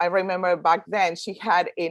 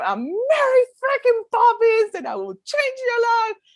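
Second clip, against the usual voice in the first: full-on, shrill yell, pitched very high; 4 dB louder than usual. Retelling being chosen at an event, yelling at the speaker: retelling a yell. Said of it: "yelling at him".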